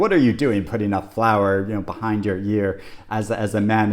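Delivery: plain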